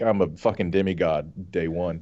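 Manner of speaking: ordinary talk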